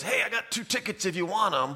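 put-on high, hollered yell from a distance. Retelling how a former coach called from the top of the bleachers: imitating someone yelling. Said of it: "he yells at me".

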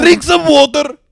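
very loud, very shrill, very high coach's yell. Telling how Guardiola talks in the dressing room, imitating Guardiola shouting. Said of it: "Ei mutta se huutaa noin".

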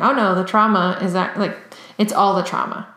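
normal talking voice

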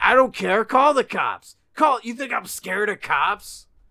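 very high, very loud, defiant scream. Retelling how a boyfriend outside a bar yelled at them: imitating someone screaming. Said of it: "he was screaming".

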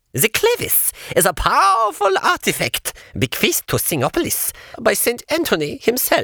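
clipped, quacking voice in short bits. Skeleton scientist Dr. Ossifer explains the clavis: clipped, quacking Dr. Ossifer voice.

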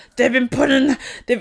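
mock shouting, ranting voice. Imitating a shouting right-wing news host: Alex Jones impression. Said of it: "yeah, he sounds like that".

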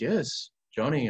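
put-on Colombian-accented English. Retelling the Father's reply when asked to talk, in his Colombian accent. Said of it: "I'm going to do the Colombian accent that he does".

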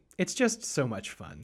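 ordinary talk

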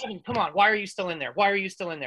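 ordinary talk

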